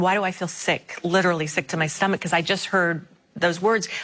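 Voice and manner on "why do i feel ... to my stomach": ordinary talk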